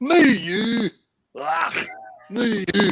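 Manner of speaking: high, drawn-out cat meow with Scottish accent. Asking whether you've ever heard a cat in Scotland: Scottish cat meow. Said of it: "heard a cat in Scotland".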